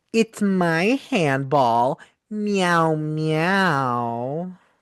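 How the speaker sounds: put-on baby voice with drawn-out meows. Recapping a bar scene where Samantha answers Chris, in a baby voice. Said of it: "in a baby voice, she just goes".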